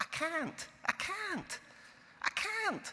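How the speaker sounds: light fake Scottish accent. Retelling what she said each day sitting opposite in the office, in her little scottish accent. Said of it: "say in her little Scottish accent".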